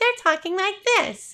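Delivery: put-on dopey, dim-witted voice, very high pitch. Explaining how people link high voices with dumbness, high dumb-sounding voice. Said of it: "associated the high voice with someone who's dumb".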